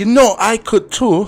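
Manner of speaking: horrible Scottish accent, shrill and loud. Speaker mentions someone had the Scottish accent, then tries it: horrible Scottish accent. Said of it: "that was a horrible accent".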